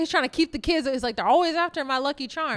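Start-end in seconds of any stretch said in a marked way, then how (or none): none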